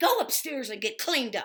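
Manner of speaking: play-acted very loud, shrill, furious angry voice. Retelling what she told Donald when she was furious, as a mock-angry order. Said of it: "She was so pissed".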